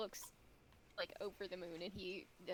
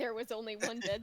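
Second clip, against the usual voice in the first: plain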